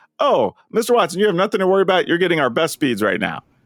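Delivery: mock bright, chipper, very happy, cheerful tone. Retelling his call to tech support, quoting the agent, imitating a very happy voice. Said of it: "with the happiest of voice".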